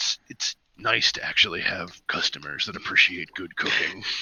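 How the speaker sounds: quiet, whispered mumble under the breath. Voicing a character who walks off clinking coins: muttering to himself. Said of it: "muttering to himself".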